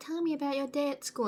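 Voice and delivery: high, wheedling parent voice. Showing how parents ask kids about their day: imitating a parent. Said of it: "you know how parents are like".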